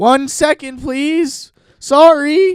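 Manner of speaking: very high, very slow, drawn-out nervous voice. Retelling answering people knocking while taking a long time, voice getting higher. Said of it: "Is the voice getting higher?".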